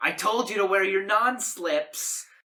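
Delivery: very loud, high angry yell. Voicing a cafe manager scolding a fallen barista: manager yelling. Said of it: "a manager yell".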